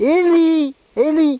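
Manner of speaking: high, loud calling.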